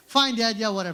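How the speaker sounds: normal talking voice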